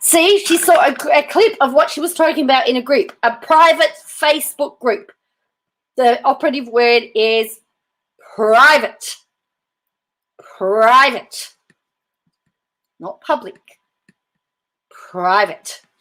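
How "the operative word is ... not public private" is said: raised, insistent, slow, drawn-out yelling. Discussing a clip someone saw of a woman talking, yelling. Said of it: "I didn't mean to yell".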